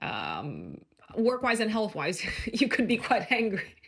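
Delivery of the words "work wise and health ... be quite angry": talking through ironic laughter. Warning listeners they could be angry about work and health, ironic laughing while talking. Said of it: "So I am laughing, a, an ironic laugh".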